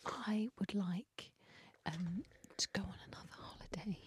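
whispering. By a stream, a player picks a wish and says it, whispering. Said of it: "Why are you whispering it?".

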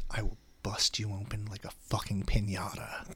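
little whisper under the breath. Retelling what was heard at a concert: imitating a whisper. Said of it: "I heard a little whisper".

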